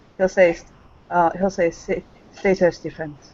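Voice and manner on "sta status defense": put-on perfect Spanish accent. Voicing a character who lifts his wine and speaks: spanish accent. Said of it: "in that perfect Spaniard accent".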